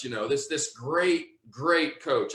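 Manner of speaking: sarcastic, ironic, mocking tone. Speaker telling a story about a team's coach, sarcastic. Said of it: "I'm saying that very sarcastically".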